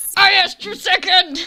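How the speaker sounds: full-on, high, loud shout. In a cave scene, an unseen voice shouts back at a character: shouting. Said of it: "Who's shouting in a cave?".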